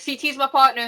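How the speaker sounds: loud, exaggerated, put-on Boston accent. Imitating a woman who wasn't cast on the season, put-on Boston accent. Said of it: "you went with the different Boston accent".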